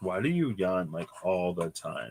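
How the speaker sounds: ordinary talk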